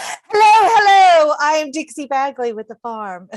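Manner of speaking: forceful, very high and loud. A podcast co-host redoes her self-introduction when asked, with more oomph. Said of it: "Say it with more oomph than that".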